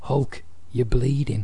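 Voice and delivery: flat, put-on wrestler impression. Recounting a wrestling segment, quoting Roddy Piper in a hushed monotone. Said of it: "just in his hushed monotone voice".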